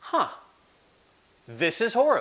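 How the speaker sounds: mock calm, plain, matter-of-fact tone. Quoting how he says something without fear or anger: mimicking calm matter-of-fact tone. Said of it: "he just says it matter of fact".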